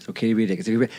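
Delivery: muttering under breath. Retelling a moment at work, the speaker quotes their own retold muttering under breath. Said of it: "I actually said it under my breath".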